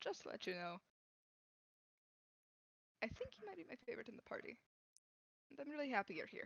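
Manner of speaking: soft, private tone. Speaking in character to one party member only: speaking quietly. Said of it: "stay just loud enough for only Ranagar to hear".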